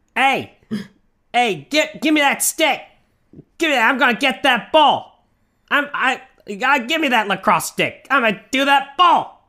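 drawn-out Northeastern lacrosse-bro accent. Showing off a new impression they've been working on: lacrosse player accent. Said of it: "This is my lacrosse accent".

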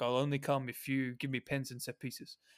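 put-on Portuguese accent. Imagining Bruno's conversation in his ear, put-on accent as Bruno. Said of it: "And nice accent there".

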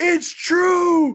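shouting. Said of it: "I'm yelling".

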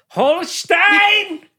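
very high, loud shriek. Screaming a name, "Holstein" screamed like Hitler. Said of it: "I just like to scream it like Hitler would say it".

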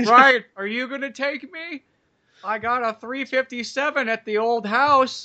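squeaky, very high grandmother voice. Joining in on a retold talk with a grandma: imitating Nana. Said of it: "Hey, Nana, how's it going?".

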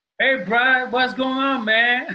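high, put-on, friendly North Carolina Southern accent. Asked to say something in a good North Carolina southern accent, speaker greets Brian. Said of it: "say something using a good North Carolina southern accent".

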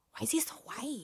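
hushed, barely voiced whisper under the breath. Retelling what the wife said while sitting there, whispering under her breath. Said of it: "Like whispering under her breath".

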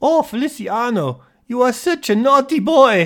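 high, loud put-on Dutch accent, pitch way up. Joking about a wig-and-accent disguise for a tour, speaking in a dutch accent. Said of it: "Use a nice Dutch accent".

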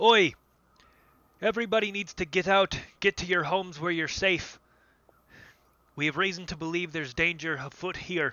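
mild high-pitched bellowing. Standing up on top of the bar, a man addresses everyone, bellowing. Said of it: "He stands up and he bellows".

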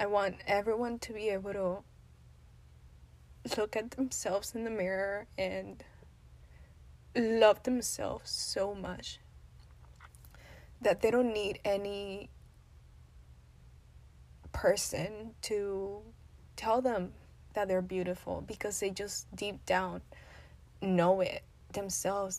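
tearful, crying, speaking through tears. Sharing a very emotional moment, speaking while crying. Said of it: "I'm sure you can tell I'm crying".

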